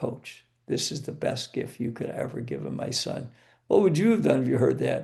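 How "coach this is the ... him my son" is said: soft, hushed whisper spoken close in. A coach retells what a player's mother whispered in his ear, retelling a whisper. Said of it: "she whispers in my ear".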